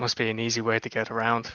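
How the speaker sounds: whispered in an acted voice. Whispering to a companion as a dragon approaches a procession: whispering in character. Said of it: "whisper over to Ler-".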